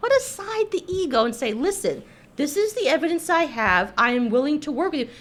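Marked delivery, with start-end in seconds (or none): none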